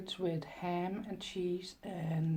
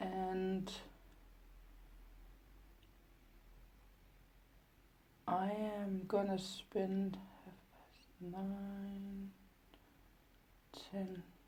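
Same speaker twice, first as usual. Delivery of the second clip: much quieter, low voice; 10 dB quieter than usual. Planning your day aloud in an echoey room, speaking low. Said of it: "I'm sorry I'm speaking low".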